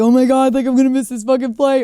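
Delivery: frantic, loud, high-pitched panic. Retelling a phone call with a manager at the airport: imitating own panic. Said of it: "I'm freaking out".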